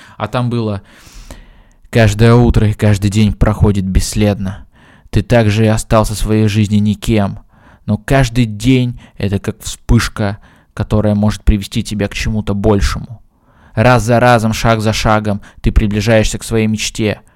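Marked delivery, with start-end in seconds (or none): 1.9-17.2 mock velvety motivational narrator voice, louder. Quoting a motivational video to another speaker: imitating velvety motivational voice. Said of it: "вот таким голосом бархатным".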